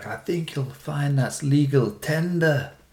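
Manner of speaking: put-on Scottish accent. Telling a joke about Scottish people, quoting them in a Scottish accent. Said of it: "Best Scottish accent of all time".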